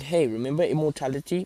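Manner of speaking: plain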